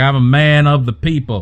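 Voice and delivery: put-on Southern accent. Showing a politician voice that people like: fake Southern accent. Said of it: "It's not a real Southern accent".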